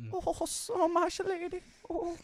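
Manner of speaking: put-on weird, strange, very high-pitched Scottish accent. Imitating how someone voices Samwise Gamgee, weird Scottish Samwise Gamgee voice. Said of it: "in a weird Scottish accent".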